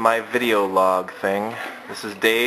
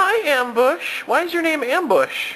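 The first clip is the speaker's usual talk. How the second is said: very high-pitched teddy-bear hand-puppet voice. During a family puppet show, one puppet greets another in a puppet voice. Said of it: "My name is [name]".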